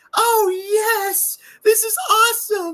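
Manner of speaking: very high, loud, excited anime voice. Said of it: "what Mason would sound like, excited".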